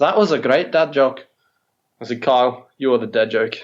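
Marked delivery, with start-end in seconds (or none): 0.0-1.2 put-on switches into a Scottish accent. Retelling a conversation, the speaker quotes Kyle in a Scottish accent. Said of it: "hang on, Scottish accent".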